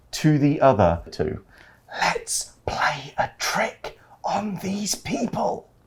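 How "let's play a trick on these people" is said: soft, hushed whisper, barely voiced. Telling a story where one traveler whispers to the other two: whispered. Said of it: "所以像刚刚 Pet 那个样子在说话 ，you whispering".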